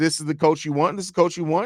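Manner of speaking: ordinary delivery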